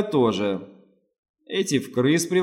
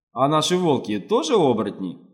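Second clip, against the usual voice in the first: plain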